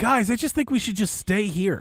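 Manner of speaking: put-on manic kid voice. Retelling how a kid in a group urged everyone to stay, imitating a manic kid. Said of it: "he sounds manic".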